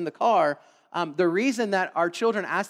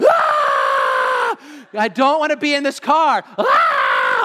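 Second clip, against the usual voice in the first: put-on very slow, loud, swooping, drawn-out child's scream; 5 semitones higher, 7 dB louder than usual. Parent retelling how their young son screamed in the car, retelling a child's scream. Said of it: "he just screamed".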